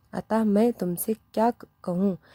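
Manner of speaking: plain reading voice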